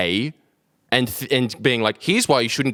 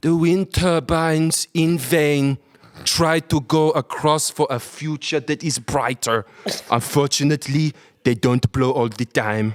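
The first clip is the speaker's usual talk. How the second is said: put-on scary, weird German accent; 3 semitones higher than usual. Imagining how the documentary would have been fine with another narrator, do a Werner Herzog impression, scary German accent. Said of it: "very scary, weird German accent".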